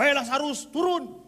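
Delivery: flustered, embarrassed, high, hurried shout. Preaching to the congregation, the speaker acts out a man's flustered outburst: retelling an embarrassed shout. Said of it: "saking malunya dia teriak langsung".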